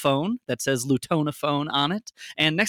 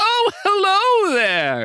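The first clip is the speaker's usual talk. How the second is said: jolly man's voice, much higher, much slower; 5 dB louder than usual. Narrator voices a half-elf man stepping out through curtains, jolly half-elf man's greeting. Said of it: "a jolly-looking half-elf man walks out and goes".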